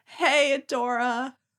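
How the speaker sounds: put-on weak, feeble-sounding voice. Retelling Catra waking and saying the line: imitating Catra saying it weakly. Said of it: "says weakly the line".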